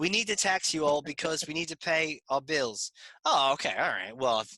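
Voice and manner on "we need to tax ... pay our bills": mock British accent, higher. Joking about the Revolutionary War: imitating a British accent. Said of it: "he said it in a British accent".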